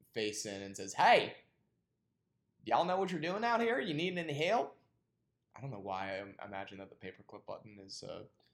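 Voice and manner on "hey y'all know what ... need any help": shrill, high, very loud country-folk holler. Voicing the Microsoft paperclip offering help: Colonel Sanders type voice. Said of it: "Colonel Sanders type folk".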